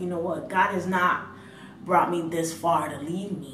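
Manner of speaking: usual speaking voice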